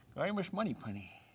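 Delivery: spoken out of one side of the mouth. Joking mid-stretch after watching a movie: Sean Connery impression. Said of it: "I was watching a Sean Connery movie".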